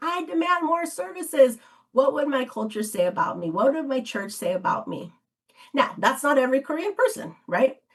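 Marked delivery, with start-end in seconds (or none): 0.0-1.6 high, demanding, shouted outburst. Retelling an interviewee imagining standing up in a meeting: imitating someone shouting. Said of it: "in a meeting and shouted".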